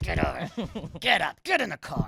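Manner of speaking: put-on irritated father voice, angry, swooping, barked. Speaker retells his father getting him out of bed, imitating an angry father. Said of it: "my father gets me out of bed like he's mad".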